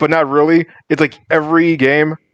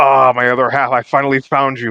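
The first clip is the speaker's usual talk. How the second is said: put-on demonic voice, lower; 3 semitones lower than usual. Retelling a plot scene where a character speaks in another voice: imitating Devil's other voice. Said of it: "now he's talking in, like, you know, other voice".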